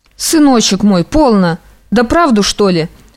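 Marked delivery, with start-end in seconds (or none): none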